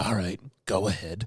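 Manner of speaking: slow, quiet, laid-back, easy drawl. Imitating a director telling the crew to begin: Clint Eastwood impression. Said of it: "like the Clint Eastwood just going".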